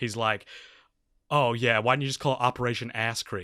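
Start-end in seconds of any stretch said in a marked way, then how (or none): 1.3-3.4 put-on sarcastic voice. Retelling a movie scene where the son answers Doctor Evil: imitating Scott's sarcasm. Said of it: "who's like real sarcastic".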